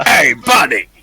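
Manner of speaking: put-on loud Italian American mafia wiseguy gangster accent. A player in an online game greets the others in a new voice, Italian American gangster accent. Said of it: "some sort of Italian American gangster now".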